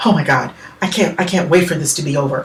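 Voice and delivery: tense, anxious breathing. Showing how a character can use breath to sound anxious. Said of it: "Or you can sound anxious by using breath".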